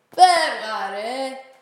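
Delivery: howling, yelling loudly. A big man drives off another man who grabbed a boy; howling. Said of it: "ούρλιαξε ο χαμάλαρος".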